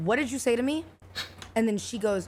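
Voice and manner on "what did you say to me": usual speaking voice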